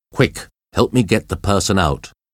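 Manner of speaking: plain reading voice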